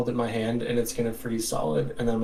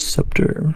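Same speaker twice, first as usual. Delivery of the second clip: quiet murmuring under the breath. Performing the murmured word after being asked: murmuring under breath. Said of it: "Do the voice".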